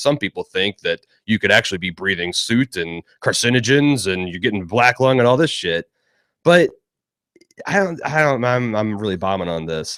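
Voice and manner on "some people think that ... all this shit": dark, menacing, ominous threatening tone. Retelling his fireplace rant, imitating a menacing voice. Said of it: "he switches into like the menacing voice".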